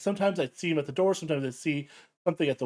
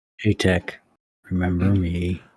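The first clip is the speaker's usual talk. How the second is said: put-on deep, methodical shadowy voice, lower; 9 semitones lower, 4 dB louder than usual. Imitating the shadow man from a dream: imitating a very deep, methodical voice. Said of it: "it'd be very deep, very, very methodical".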